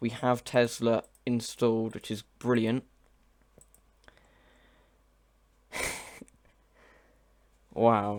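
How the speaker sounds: words broken up by laughing, talking through laughter. Showing a software library, reacting to the chat: laughing while talking. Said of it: "I'm just laughing at the chat".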